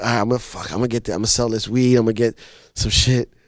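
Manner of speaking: fast, nervous, stumbling rambling. Retelling going up to sell weed at school, imitating his own nervous talk. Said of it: "I was nervous".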